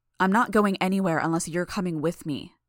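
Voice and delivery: ordinary talk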